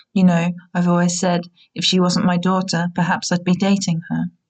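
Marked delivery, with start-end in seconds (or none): none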